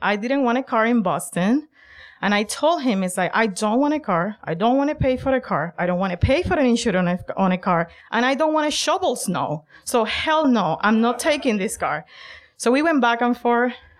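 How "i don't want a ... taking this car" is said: play-acted livid, angry, insistent tone. Retelling a refusal to a father about taking a car: retelling an angry refusal. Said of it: "I get angry at him".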